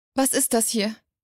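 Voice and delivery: ordinary delivery, nothing marked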